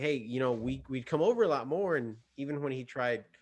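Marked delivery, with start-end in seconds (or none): 0.0-2.0 earnest, begging, coaxing, pleading voice. Retelling asking him to come over more: retelling own pleading.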